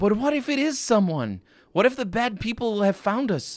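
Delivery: put-on very high, begging, pleading teenage boy's voice. Another voice, an adolescent boy, asks about the visitors: high-pitched pleading adolescent boy. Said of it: "high-pitched and pleading, an, ad- an adolescent boy".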